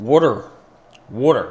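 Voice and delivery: put-on water pronounced werder, Berks County accent. Showing how people in Berks County, Pennsylvania say water: Berks County, Pennsylvania accent. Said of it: "Or as they say in Berks County, Pennsylvania".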